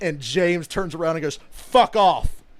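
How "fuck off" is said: shrill, very loud, genuinely irritated, angry voice. Retelling James turning around on Lars, retelling James's genuinely pissed retort. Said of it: "he was genuinely pissed".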